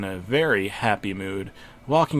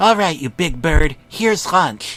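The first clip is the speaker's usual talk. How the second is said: loud, high-pitched large-bird voice; 7 semitones higher, 8 dB louder than usual. Recalling feeding a large bird its lunch, the speaker uses their big bird voice. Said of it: "I said in my big bird voice".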